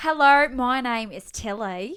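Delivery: very loud, very slow put-on Australian accent. Introducing herself for a video in a put-on accent: put-on Australian accent. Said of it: "I'm gonna put on an accent".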